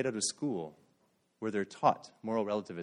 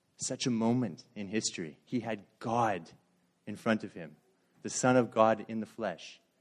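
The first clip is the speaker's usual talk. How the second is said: usual speaking voice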